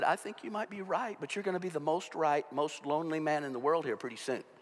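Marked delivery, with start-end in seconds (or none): none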